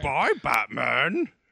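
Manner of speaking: puppet-style character voice. Speaker tries saying Bane's goodbye to Batman in a Grover-like voice. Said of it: "That was Grover".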